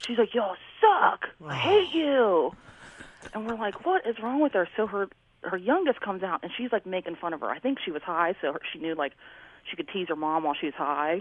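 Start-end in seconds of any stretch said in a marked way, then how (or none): 0.3-2.5 mock very slow, high, stretched-out screaming. Retelling a mother screaming at her family outside the house, imitating someone screaming. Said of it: "She's screaming at her family".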